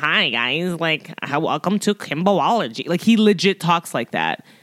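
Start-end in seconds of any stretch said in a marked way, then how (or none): 0.0-2.9 exuberant put-on nerdy radio voice. Show how an exuberant YouTuber you follow talks, imitating an annoying radio nerd voice. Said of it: "constant radio annoying nerd voice".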